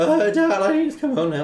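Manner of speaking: mock drunken call, very high and very loud. Retelling calling a dad to be picked up: imitating own drunk self. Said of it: "super drunk".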